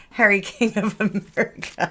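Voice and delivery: high-pitched speech broken by giggles and laughter. Speaker jokes to listeners on a Monday, laughing while talking. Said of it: "I'm sorry, I'm laughing".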